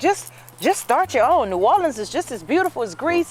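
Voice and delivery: high, upbeat, encouraging push. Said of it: "she was like".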